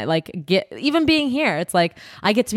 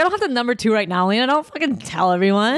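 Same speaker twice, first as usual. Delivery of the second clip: ordinary delivery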